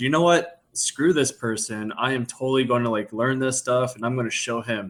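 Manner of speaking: ordinary talk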